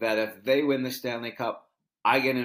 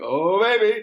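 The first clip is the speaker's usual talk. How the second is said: very high, loud, belted call; 10 semitones higher, 8 dB louder than usual. Retelling talking to friends on the phone, doing a Bob Cole voice. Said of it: "I keep wanting to do his voice".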